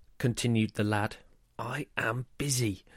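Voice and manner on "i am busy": hushed, growled words. Narrating a story, Mum answers her son John at the supermarket: growled. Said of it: "Mum growled".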